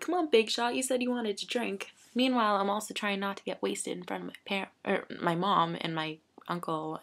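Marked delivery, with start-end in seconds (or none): 0.0-1.9 playful, mocking teasing tone. Retelling how family made fun about drinking: imitating family making fun. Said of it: "My family's making fun of me".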